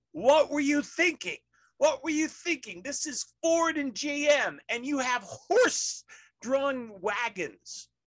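very high, slow, furious, out-of-control yelling. Retelling a film scene, yelling at the German soldiers: imitating Ron Livingston yelling. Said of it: "he starts yelling at the Germans".

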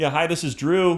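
put-on yell, loud and high, carrying. Acting out announcing a name outside so a neighbor hears: imitating own yelling. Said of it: "I'm pretty much yelling it".

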